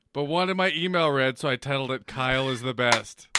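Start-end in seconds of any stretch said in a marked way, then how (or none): none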